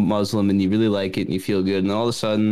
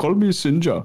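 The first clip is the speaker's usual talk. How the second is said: put-on Indian accent with higher voice; 8 semitones higher than usual. Joking about how others talk, a friend says his line in a put-on Indian accent. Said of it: "I guess I could talk like that".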